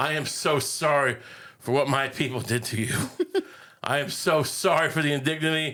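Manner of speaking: put-on, abject, groveling, begging tone. Retelling a scene, kneeling and apologizing to a man: mock Superman groveling apology. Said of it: "he gets on his knees, he goes".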